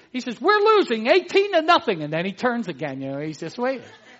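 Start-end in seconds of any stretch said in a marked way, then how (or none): 0.4-2.0 put-on very high, loud, eager, enthusiastic little boy voice. Telling a story of a boy answering a man asking the score, imitating an enthusiastic little boy. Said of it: "the little boy said rather enthusiastically".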